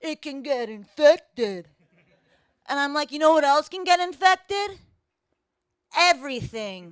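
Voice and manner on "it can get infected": slow, dopey, dim-witted dumb-guy voice. Retelling what a guy told her, doing an impersonation of men in general. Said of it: "That's my impersonation of men in general".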